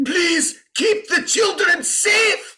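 overacted pleading scream, very high. Retelling how a man played a scene too big, imitating him screaming. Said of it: "And he's like screaming".

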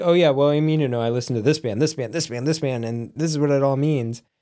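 ordinary talk

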